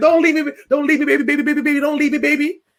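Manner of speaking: high, weeping, repeated crying pleas. Retelling a husband following his wife away, imitating someone crying. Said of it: "was behind her crying, like".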